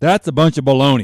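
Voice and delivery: mock angry, loud, barked delivery. Speaker retells pointing at lunch meat in the meat department, acting out an angry, loud voice. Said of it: "angry, loud voice".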